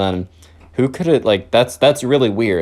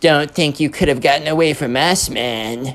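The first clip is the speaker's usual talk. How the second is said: put-on emo kid character voice; 2 semitones higher than usual. Reading aloud a letter someone opened, in an emo kid voice. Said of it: "I'm going to try and read it in the emo kid voice".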